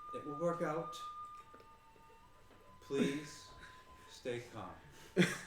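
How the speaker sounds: soft, breathy, hushed whisper. A game master voices a character speaking into a player's mind, whispering. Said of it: "you hear her kind of whisper in your mind".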